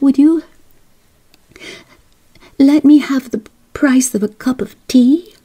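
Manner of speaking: stammered words. Narrator reads a voice addressing Madam in a story: stammering. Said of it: "stammered the voice".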